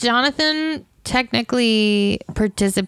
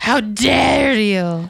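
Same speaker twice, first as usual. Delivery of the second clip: mock outraged, furious, indignant vampire lord voice. Imitating Dracula catching others with his brides: imitating an angry Dracula. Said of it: "he gets so mad".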